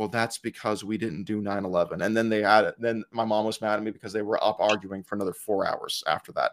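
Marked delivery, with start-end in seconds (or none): 0.0-2.1 mock condescending grandfatherly tone, lower pitch, quieter. Retelling an argument, the speaker quotes a man who clapped his shoulder, mock condescending grandfatherly tone. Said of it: "said in just this condescending grandfatherly, oh, little boy tone".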